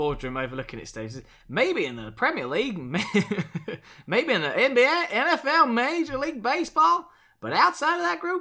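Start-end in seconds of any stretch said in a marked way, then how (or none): 1.5-8.4 high, loud, slow Southern American drawl. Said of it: "He says in the Southern drawl".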